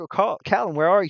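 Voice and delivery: loud calling voice. Voicing an elf searching in the fog: calling out. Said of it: "she's like".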